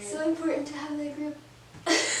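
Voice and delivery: voice catching with tears. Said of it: "I'm getting teary-eyed!".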